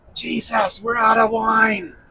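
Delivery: high, soft, close half-whisper. Narrating a party story, his mother leans close to Jesus' ear: half-whispering. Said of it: "she whispers in his ear".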